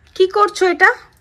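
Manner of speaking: loud, high-pitched scolding tone.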